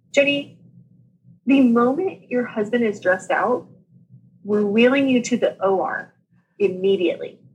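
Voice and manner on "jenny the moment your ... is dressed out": usual speaking voice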